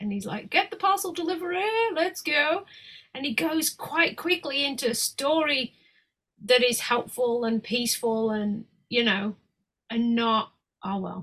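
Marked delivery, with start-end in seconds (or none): 0.5-2.6 mock, high-pitched, excited yell. Speaker acting out him yelling about his standing frame: retelling a yell. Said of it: "he yells about it".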